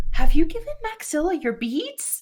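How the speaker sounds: hushed, quiet, voiced stage whisper. In a roleplay scene, one character leans to another, half-whispering. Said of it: "Gris kind of like whispers to Travis".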